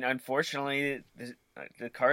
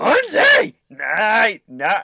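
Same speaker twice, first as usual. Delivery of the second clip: very loud, high warbling yell, pitch swinging wildly; 9 semitones higher, 13 dB louder than usual. Retelling trying the voice while driving: Bobcat Goldthwait impression. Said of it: "I wonder if I could do a Bobcat impression".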